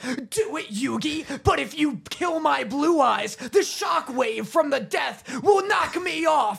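taunting, pitched high, slow and drawn out. Acting out a parody scene, speaking as Kaiba: Kaiba voice. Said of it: "Kaiba, like, gets up on the ledge of the tower and he goes".

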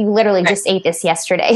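ordinary talk

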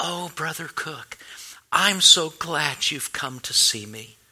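sweetest, gentle, tender voice. Retelling what a woman said when he came to see her, imitating a sweet, tender voice. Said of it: "in the sweetest, most tender voice".

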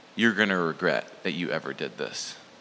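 mock dead-serious, low, grave voice. Retelling what a man told them after getting home: imitating a very serious tone. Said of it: "In a very serious tone".

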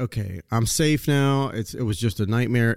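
ordinary delivery

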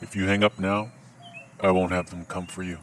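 soft, very low, deep voice. Retelling a reply to a scam caller: soft Liam Neeson-esque tone. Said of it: "softly with a sort of Liam Neeson-esque tone".

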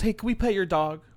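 put-on, sugary, very sweet friendly tone. Retelling what one of two guys said to you, mock-sweet tone. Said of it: "looks at me in the eye very sweetly".

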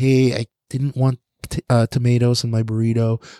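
put-on, exaggeratedly overly nice tone. Retelling what he always said to food workers, imitating him, super nice. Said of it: "He would just say it like super nice".

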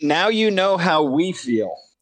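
high, called-out retort, tossed back. A player's character answers the goblins before combat, shouting back at goblins. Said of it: "is what I shout back at the goblins".

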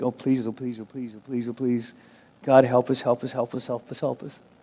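play-acted, desperate begging, repeated over and over. Retelling a prayer over a woman: imitating a desperate prayer. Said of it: "pray more of, of, like, desperation".

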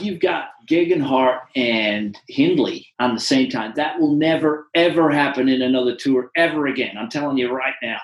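put-on Texas-style speaking voice. Quoting a podcast remark about two riders: Lance Armstrong Texan voice. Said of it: "I'll put on my best Texan voice here".

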